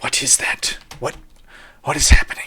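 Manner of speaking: whispered alien voice. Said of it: "your symbiote in the back of your head is like".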